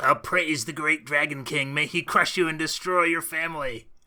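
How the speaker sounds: loud put-on kobold creature voice. Asked to say something a kobold would say, in a kobold creature voice. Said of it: "let's hear your kobold voice".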